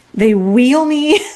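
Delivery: plain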